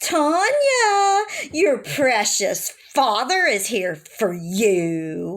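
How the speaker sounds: almost giddy, high-pitched sing-song delivery. Speaker retells what a woman called to tanya, imitating her high-pitched giddy voice. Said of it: "in her high-pitched voice sounding almost giddy".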